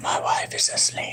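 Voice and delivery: soft, hushed, barely voiced whisper. Speaking to the others, talk in a whisper. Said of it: "I whispered".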